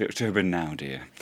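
mocking condescending voice. Repeating another speaker's remark back to them: imitating a condescending tone. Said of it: "that was, like, the most condescending thing ever".

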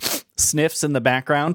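plain

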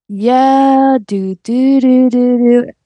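dragged-out, slow drawl. Imitating how the boyfriend answers interviews: imitating slow-talking boyfriend. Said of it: "you did a good impression of him".

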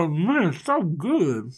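talking while smacking lips between words. Acting out Dad enjoying his food and ignoring his son, lip smacking. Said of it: "the sound of, like, lip smacking".

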